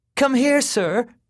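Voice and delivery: high, hollering, loud, high-pitched yell. A man in a car calls an old man over from across the street, yelling. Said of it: "Kenny yelled".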